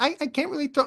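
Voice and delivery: very high, soft, sweet little voice. Acting out her lines in a made-up joke scene: sweet little voice. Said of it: "It's her sweet little voice".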